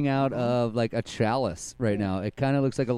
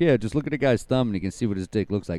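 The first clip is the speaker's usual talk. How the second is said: usual speaking voice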